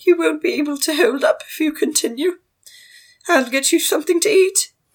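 high, posh voice. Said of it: "Madame Jean's like".

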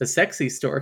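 ordinary talk, nothing marked

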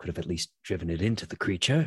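grumbled aside, kept quiet to herself. A player voices their sorceress watching the craft spiral off, muttered under her breath. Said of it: "she'll say under her voice".

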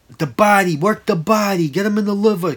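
slightly high yelling. Watching a fight alone, the speaker reenacts yelling at the tv: retelling a scream. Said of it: "screaming at the freaking TV".

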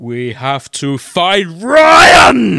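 very loud, rising, swooping scream. Told to try screaming into the microphone, a player has a go, screaming. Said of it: "If you try screaming into the microphone".

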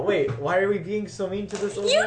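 loud, climbing yell of protest in character voice. Speaking in character to the rest of the party: in-character yell. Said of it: "and I just yell".

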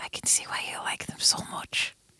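hushed whispered aside. Voicing a character who leans over and whispers to a friend: whispering in character. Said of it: "Cal leans over to Adrian and whispers".

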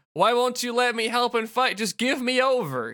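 put-on high, desperate character yell. Retelling a ninja character asking to help fight: imitating a character yelling.

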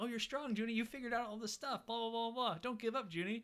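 high-pitched, encouraging, cheering voice. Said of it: "Carmen's trying to talk him up, like".

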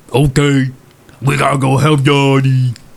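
unintelligible drawling character voice. Speaking in character as Gunk Bog to the group, in Gunk Bog's unintelligible drawl. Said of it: "they hear your unintelligible drawl".

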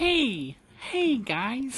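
very high, squeaky, mousy sing-song preschool-teacher voice. Mocking a wrestler's voice as mousy: mousy preschool teacher voice, Casey Catanzaro. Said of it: "she sounds like a preschool teacher".

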